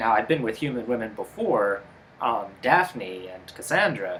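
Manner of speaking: ordinary talk, nothing marked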